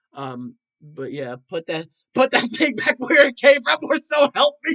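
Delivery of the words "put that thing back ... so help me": mock terrified voice, higher and louder. Speaker acts out a friend's reaction to that thing, imitating Carson's terrified reaction. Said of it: "that was 100% Carson's reaction".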